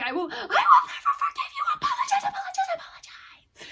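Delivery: very high, shrill, swooping, climbing feral scream. Retelling how a character yells at two others: imitating Zenitsu yelling. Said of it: "he yells at them".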